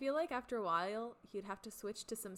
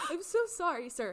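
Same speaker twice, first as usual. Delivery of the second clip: profusely apologetic, loud, raised and high-pitched; 12 dB louder than usual. Describing a favorite movie scene, imitating Jack apologizing. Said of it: "Jack's so apologetic".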